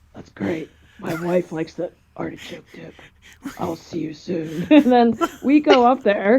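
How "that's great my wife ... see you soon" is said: low, very quiet, creepy murmur. Retelling his own reply to someone, sounding like a serial killer. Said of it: "You sound like a fucking serial killer".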